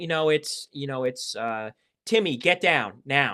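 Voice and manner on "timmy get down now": firm, no-nonsense, commanding tone. Demonstrating how to take control, ordering Timmy to get down, firm, deep voice. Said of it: "speaking firmly, speaking in a relatively deep voice".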